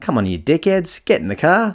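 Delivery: put-on Australian accent. Retelling a coworker calling the others to the car: imitating a thick Australian accent. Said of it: "in a very thick Australian accent".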